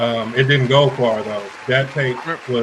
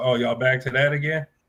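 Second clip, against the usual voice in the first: usual speaking voice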